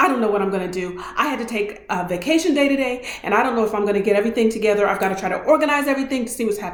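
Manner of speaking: put-on panicking woman's voice. Retelling what a woman said in a store's bread aisle: imitating a panicking woman. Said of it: "this woman was panicking, literally panicking".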